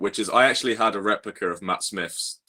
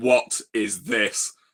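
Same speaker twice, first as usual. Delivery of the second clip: hard, stern, threatening, intimidating tone. Retelling how a door bouncer questioned him: imitating a thundering voice. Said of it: "with absolute steel in his eyes and thunder in his voice".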